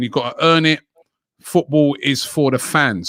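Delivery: ordinary talk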